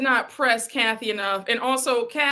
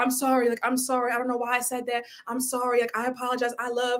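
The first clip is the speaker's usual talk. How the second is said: put-on frightened, pleading, begging voice; 5 dB quieter than usual. Retelling Marlo's apology to Andy: imitating Marlo's scared apology. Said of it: "Marlo was scared of that. She was like".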